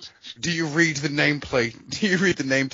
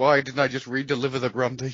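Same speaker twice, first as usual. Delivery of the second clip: plain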